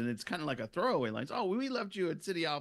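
ordinary talk

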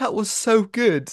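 play-acted, very high, tearful child's voice. Reviewing a movie, speaker imitates kids at the end: imitating tearful kids. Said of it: "said in like tearful voices".

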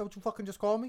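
tough mob boss voice. Joking with friends after being called a Tony Soprano, Tony Soprano impression. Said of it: "This isn't even a Tony Soprano".

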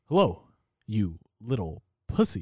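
pause mid-line with swinging pitch. Answering how his voice goes: William Shatner voice. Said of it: "how does his voice go again?".

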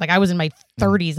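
ordinary talk

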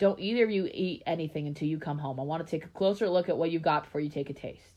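ordinary delivery

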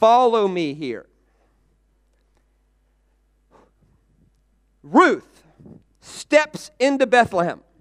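very slow, deliberate, spelled-out delivery. Stopping to make a point to the room: talking very slowly. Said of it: "I'm gonna stop and talk very slowly".

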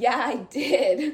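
slow, loud, smug tone. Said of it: "And he goes".

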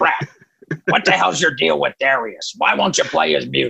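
rough, gravelly voice. Retelling a phone call from a rock manager, imitating Doc's gravelly voice. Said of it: "he's got this real gravelly, like Danny DeVito voice".

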